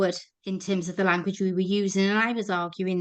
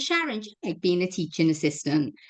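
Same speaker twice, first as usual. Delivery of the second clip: usual speaking voice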